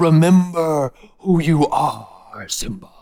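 slow, drawn-out, unhurried delivery, every word weighed. Retelling a scene where a father speaks from the clouds: imitating Mufasa. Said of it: "And Mufasa's like".

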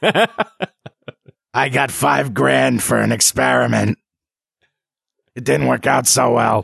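rough, creaky, wrecked-sounding voice. A character explains his condition, speaking in a voice without throat lining. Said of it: "I'm talking like this because my throat lining has been removed".

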